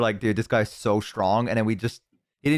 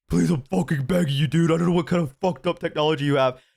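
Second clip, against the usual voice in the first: pleading, groveling, desperate ghostly begging voice; 5 semitones higher than usual. Acting out ghosts reacting to a spirit box: pretend ghost begging. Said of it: "they go".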